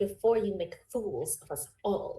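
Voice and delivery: muttered, grumbling scolding tone. A grandma drags someone out of the room, muttering under her breath. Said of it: "just under her breath".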